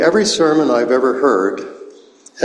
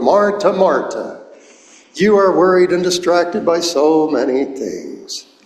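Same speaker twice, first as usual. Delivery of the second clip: put-on Irish accent, brogue; 4 semitones higher than usual. Retelling how he told his favorite story, quoting Jesus in an Irish brogue. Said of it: "he would say in his Irish brogue".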